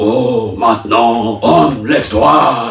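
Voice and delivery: very slow, big, grand, acted god-like voice. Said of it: "avec une grosse voix qui fait trembler".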